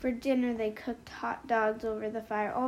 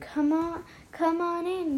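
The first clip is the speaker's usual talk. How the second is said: yelled call, loud and high; 7 semitones higher, 5 dB louder than usual. A narrator reads a girl calling out to another girl at the lake, yelling. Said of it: "she yelled".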